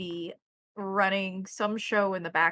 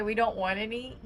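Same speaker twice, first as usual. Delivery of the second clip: plain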